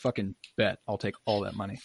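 normal talking voice

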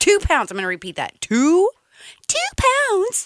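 familiar mouth voice. Eating deep dish pizza, the speaker repeats its weight in that mouth voice. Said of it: "There's that mouth voice".

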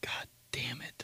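said under one's breath. Speaker retells what they said under their breath near their dad, muttered under breath. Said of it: "Under my breath".

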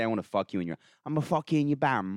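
Cockney British accent. Showing a favorite sentence to say: Cockney accent. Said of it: "I like the Cockney British accent".

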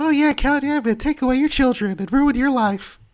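squeaky, very high puppet voice. Retelling a voice someone did during a bit, in a high-pitched voice. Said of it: "in like a high-pitched voice".

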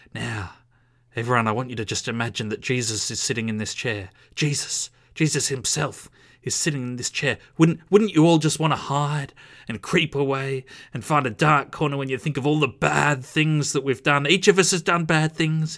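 loud, revelatory preacher sermon voice. Retelling a visiting preacher's sermon from a book: imitating a preacher's hushed voice. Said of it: "sort of wide-eyed, um, hushed voice".

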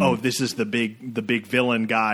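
usual speaking voice

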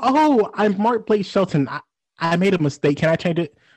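grand star-like manner, stumbling over the start. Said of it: "She was like".

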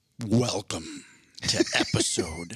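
deep, low, swooping, spooky announcer voice. Podcast host opens the episode, in a dramatic scary Halloween voice. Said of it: "That was my dramatic, scary Halloween voice".

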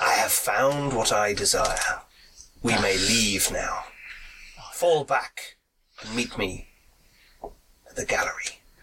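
low, strange, unsettling radio-like voice. Game master voices a stranger coming through a character's comm, in a strange voice. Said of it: "a strange voice come through".

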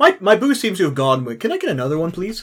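very nonchalant, casually unbothered delivery. Playing a character asking the waitress for a refill: very nonchalant. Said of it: "Just very nonchalantly".

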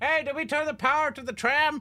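put-on very high, calling-out shout. Speaker acting out calling to someone inside during a game, retelling a yell. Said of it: "I'm yelling at a bucket to come back out".

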